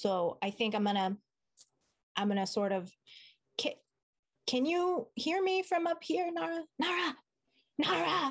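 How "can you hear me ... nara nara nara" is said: loud, aggressive stage whisper, much higher. Calling to a companion to check they can hear: loud aggressive yell-whisper. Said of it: "I do sort of like a loud, aggressive yell whisper".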